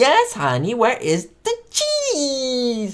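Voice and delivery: put-on swooping Cuban accent, hard-stressed drawn-out "cheese". Retelling a favourite TV episode line in Ricky's Cuban accent, stressing cheese. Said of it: "with his weird accent, what is Cuban accent".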